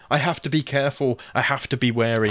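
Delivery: ordinary delivery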